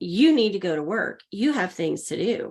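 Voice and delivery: plain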